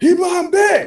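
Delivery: high, loud battle cry. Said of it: "the second he goes".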